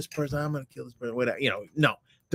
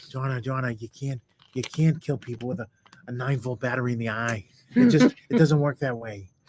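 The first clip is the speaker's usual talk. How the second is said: sweet, mild, kindly, mild-mannered tone; 3 semitones lower than usual. Asked to imitate a mild-mannered friend scolding another: John impression. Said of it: "do your John impression of John telling Donna".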